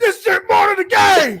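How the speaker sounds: very high, loud, stretched-out, swooping all-out scream. Picturing a friend with a microphone: imitating someone screaming loudly. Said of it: "screaming real loud".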